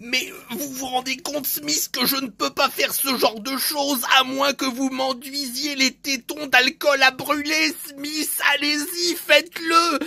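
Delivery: horrible, overdone, exaggerated, sleazy, gross character voice. Imitating a CIA director character: imitating this guy. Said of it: "j'imite ce gars".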